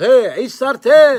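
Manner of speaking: loud, high-pitched mock yell.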